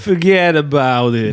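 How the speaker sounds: lazy Italian-American accent. Imagining moving to new york with a co-host, in a lazy american italian accent. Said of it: "My lazy American Italian accents".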